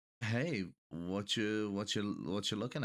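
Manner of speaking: speaking very quietly, hushed. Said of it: "very quietly be like".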